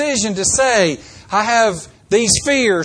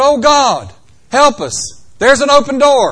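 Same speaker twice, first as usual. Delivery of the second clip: acted, loud, stretched-out hollering cry; 4 semitones higher, 6 dB louder than usual. Retelling what the group cried out when a door came open, retelling a holler. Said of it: "We hollered".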